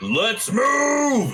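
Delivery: big booming shout, very high, drawn-out. Voicing a character rallying freed prisoners: big booming Sam voice. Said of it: "in that big booming Sam voice".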